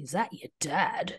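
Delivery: play-acted, judging, doubtful, disapproving tone. Retelling how kids at school asked about a dad: imitating kids' negative tone. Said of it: "And just the tone".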